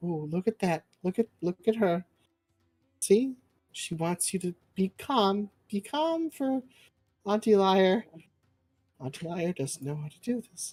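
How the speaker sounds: soothing, calming, gentle hushing. Playing a character who rocks a screaming child: soothing a crying child. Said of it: "Just kinda, like, rocking him".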